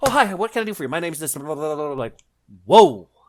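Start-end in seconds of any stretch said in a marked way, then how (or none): 0.0-1.9 high, hyper, over-energized, spazzing-out chatter. Showing how a high-energy person who is spazzing out would talk. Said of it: "high energetic person who's like spazzing out".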